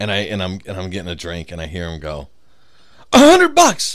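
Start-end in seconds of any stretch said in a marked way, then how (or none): 3.1-3.9 mock-excited shout, much higher pitch. Retelling what a man shouted at his lottery ticket, imitating an excited shout. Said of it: "he's all excited".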